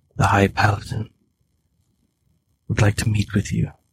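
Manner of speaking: quiet, hushed, private-sounding voice. The character turns from the gathered group and speaks so only you can hear, in a lowered voice. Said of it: "Then he lowers his voice".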